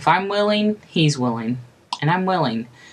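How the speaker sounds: ordinary delivery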